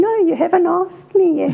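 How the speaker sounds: normal talking voice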